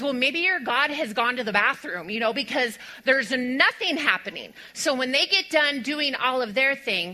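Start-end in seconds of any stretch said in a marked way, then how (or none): none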